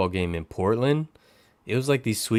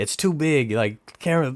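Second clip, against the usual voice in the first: mock grumbling, scolding voice, yelling; 4 semitones higher than usual. Retelling a lady at a game complaining about a camera lens: imitating someone yelling. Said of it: "yelling at me about my camera lens".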